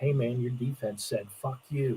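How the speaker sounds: hushed, secretive tone, like something murmured close to an ear.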